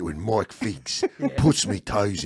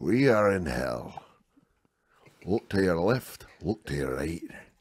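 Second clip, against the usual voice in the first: put-on heavy Scottish accent; 4 dB quieter than usual. Trying out the Inches speech as Sean Connery: Scottish Sean Connery impression. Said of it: "That's just too Scottish".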